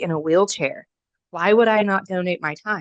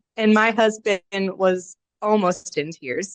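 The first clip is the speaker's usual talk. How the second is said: ordinary delivery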